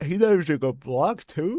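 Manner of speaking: high, loud talking through a yawn.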